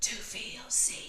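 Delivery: throaty whisper from the throat. Showing the wrong way to say a line, whispered from the throat. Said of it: "Don't whisper it like this".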